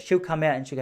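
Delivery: ordinary delivery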